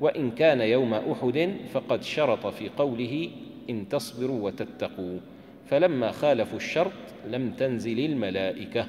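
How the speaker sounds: ordinary talk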